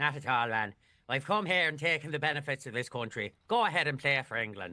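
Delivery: put-on Northern Irish accent. Reading a quoted line aloud in a Northern Irish accent. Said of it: "it's Northern Ireland. Oh, I can really flex".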